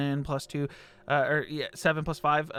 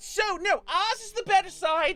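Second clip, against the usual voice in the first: arguing, quarreling nobleman voice, higher pitch. Voicing an arguing noble as the party walks between them: arguing noble voice. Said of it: "trying to, like, speak over your bodies".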